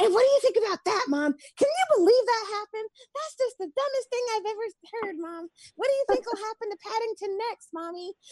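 put-on squeaky, very high small-child voice. Retelling how they paused a story to talk to Mom: very young child's voice. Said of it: "You do a very young child's voice".

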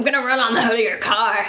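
put-on beast voice. Imagining its reply to meeting someone on a dark road at night, Beast of Bray Road voice. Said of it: "What's a beast voice?".

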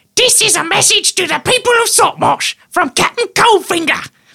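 very high-pitched goblin speech. A message plays through the sending stone in a goblin's chest: goblin voice. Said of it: "In the goblin's voice".

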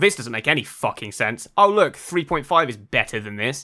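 normal talking voice

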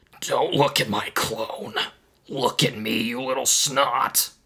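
gravelly, rough-edged, demanding alien voice. Reading a story aloud, voicing an alien and his clone addressing Marty, in a gravelly alien voice. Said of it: "An ET disciple with the ability to make clones of itself. / A teal-skinned E.T. with a dark gray fedora burst from the fortress's entrance, / That was my wife! / said a gravelly voice from behind the".

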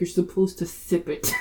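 hushed whisper. Retelling how mom corrected them during communion, retelling mom's whisper. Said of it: "my mom like whispered to me".

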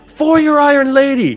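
very high, loud rallying battle cry. Voicing an armored warrior rallying her army: battle cry shout. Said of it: "She goes".

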